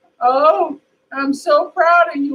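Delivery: crying, welling up with pride, high and slow. Retelling how a grandfather showed up at a graduation: imitating someone crying. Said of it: "he was crying to my".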